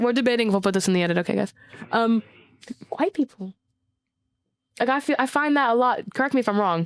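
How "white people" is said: scared, very quiet, hushed half-murmur, barely said. Naming a topic while debating whether to say it, said very quietly. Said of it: "I said it very quietly".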